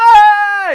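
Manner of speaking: mock celebratory shout. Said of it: "I'll be like".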